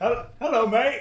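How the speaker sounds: put-on British English accent. Told to talk like an Englishman, a speaker greets the others in British accent. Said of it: "British accent".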